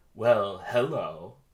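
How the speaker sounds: passive-aggressive tone. A man entering the apartment as two others toast greets them passive-aggressively. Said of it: "very passive aggressively".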